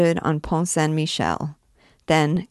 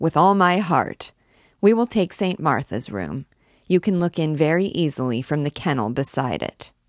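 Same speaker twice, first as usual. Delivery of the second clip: ordinary delivery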